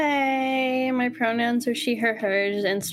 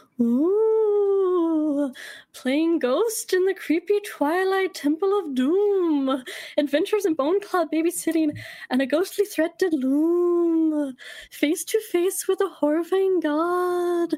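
spooky ghost voice, higher; 7 semitones higher than usual. Reading a fan poem aloud as a ghost character: ghost voice. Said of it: "insert ghost voice".

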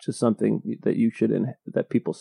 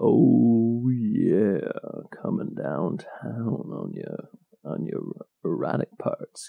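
low, soft, whispered sexy voice. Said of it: "Do your sexy voice again".

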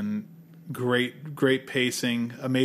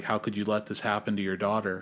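mock angry scolding tone, quieter; 3 semitones lower, 4 dB quieter than usual. Recounting a scene where a man chastises a father, imitating his angry scolding. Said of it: "And he gets mad at him".

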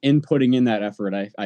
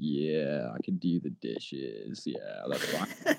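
smouldering slow burn, very low, very slow; 8 semitones lower, 11 dB quieter than usual. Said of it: "talking like [name]".

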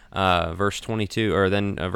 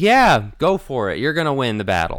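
heavy mocking sarcasm, raised pitch, swooping tune; 6 semitones higher, 5 dB louder than usual. Retelling a story, imitating a man's sarcastic reply. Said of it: "sarcastically says".

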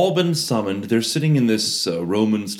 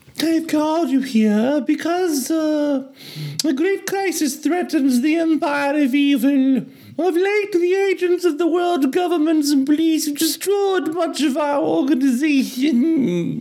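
very high-pitched, whiny villain voice. Playing the masked Emperor addressing the agents he summoned, in a high-pitched whine. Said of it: "It's a high-pitched whine".

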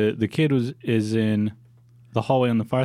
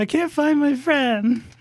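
put-on very high, tearful, crying little-girl voice. Voicing a young girl who is crying and holding a teddy bear: crying little girl voice. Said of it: "but as she's crying".

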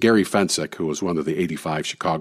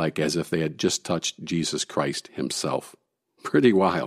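plain

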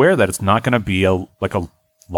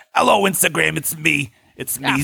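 put-on old lady voice, higher; 4 semitones higher, 3 dB quieter than usual.

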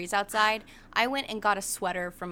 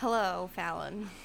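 worn-out, drained, joyless, unhappy tone; 3 dB quieter than usual. Greeting the other speaker back, not sounding too happy. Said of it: "You don't sound too happy".

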